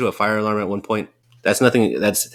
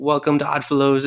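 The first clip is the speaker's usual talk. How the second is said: theatrical, cartoonish, gimmicky villain voice, pitched up; 5 semitones higher than usual. Imitating the Oddfellows character's greeting: imitating Oddfellows. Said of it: "the gimmicky kinda Joker ripoff".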